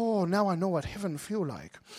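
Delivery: put-on English spoken with a Korean accent. Retelling what a man said after a long flight, in his korean accent. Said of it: "in his Korean accent".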